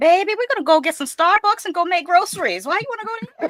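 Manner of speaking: very high-pitched, loud voice. Retelling what the cousins say about visiting the tomb: imitating cousins. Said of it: "They be like".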